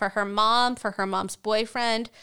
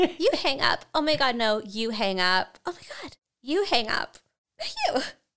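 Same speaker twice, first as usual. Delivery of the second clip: put-on squeaky teen voice, swooping; 3 semitones higher than usual. Acting out a phone call where neither wants to hang up: squeaky teenage voice. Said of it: "you do have a squeaky voice like a teenager".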